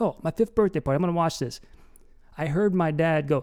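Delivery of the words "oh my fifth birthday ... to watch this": ordinary delivery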